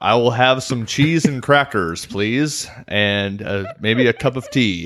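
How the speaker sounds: British speaker's slow put-on American accent. Asked to play an English person doing an American accent: English person's American accent. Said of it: "Can you do an impression of an English person doing an American accent?".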